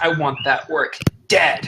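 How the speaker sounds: each word spat out with a slight spit. A game master voicing a woman who offers the players a job, spitting the words out. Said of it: "she kind of spits out a little bit as she says that".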